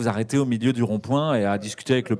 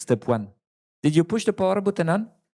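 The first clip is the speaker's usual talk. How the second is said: imitated Indian accent, higher pitch; 7 semitones higher than usual. Describing a computer hotline in India, the speaker mimics the agent in an Indian accent. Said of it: "Tu fais vachement bien l'accent indien".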